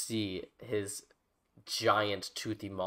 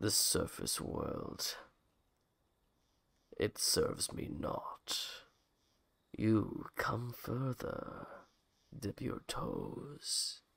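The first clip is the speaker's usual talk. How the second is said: very slow, whispered voice of a giant sea creature; 5 dB quieter than usual. Game master voicing an enormous underwater creature speaking to the players: enormous underwater creature voice. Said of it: "comes this enormous creature that stays around 100 feet away from you, still underwater, and you hear it say, "You smell like meat." You see it has these rows and rows and rows of sharp teeth. ... You can hear them going as you hear a much deeper voice".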